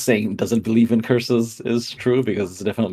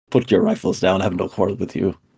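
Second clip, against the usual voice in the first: condescending, dismissive, talking down; 3 semitones lower than usual. A player's character addresses the people on the barricades, condescending. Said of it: "she just condescendingly says".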